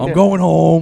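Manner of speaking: very loud, high-pitched scream at top of lungs. Retelling yelling at drunk friends getting out of the car: imitating own screaming. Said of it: "I'd be, like, screaming".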